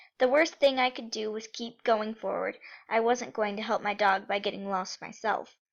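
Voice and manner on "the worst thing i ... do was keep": usual speaking voice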